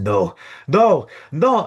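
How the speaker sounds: begging desperately. Retelling a story scene, voicing a woman desperately begging someone not to leave, pleading no. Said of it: "as she screams".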